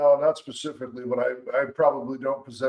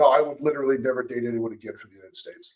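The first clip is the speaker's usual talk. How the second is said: plain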